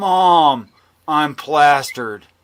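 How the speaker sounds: put-on deadpan, serious child voice. Retelling what a three-year-old told his mom: imitating a deadpan serious child. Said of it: "deadpan serious".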